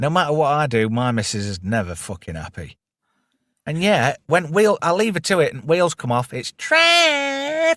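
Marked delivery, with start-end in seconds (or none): 6.3-7.8 very high, horrible whingy whine, drawn out. Complaining about his missus, imitating her whingy voice. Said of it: "She's got this really horrible fucking whingy voice".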